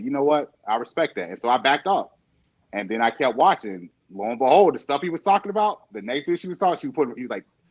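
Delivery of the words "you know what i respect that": ordinary delivery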